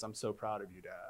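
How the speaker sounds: mock, very flat, low deadpan monotone. Recounting his daughter's reply after he let it go, imitating a very flat tone. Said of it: "she very flatly says".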